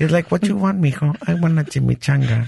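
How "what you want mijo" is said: high, exaggerated Mexican accent. Speaker retelling asking his dad for pesos, Nacho Libre-esque Mexican accent. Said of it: "the voices that I give them. It's like real Nacho Libre-esque".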